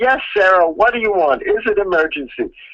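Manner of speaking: high-pitched yell, called out from a distance. Retelling answering a knock at the office door: imitating own yell. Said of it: "and I yelled".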